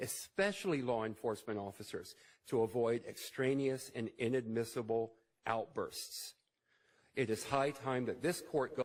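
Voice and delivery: plain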